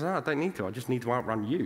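normal talking voice

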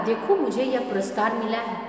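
ordinary delivery

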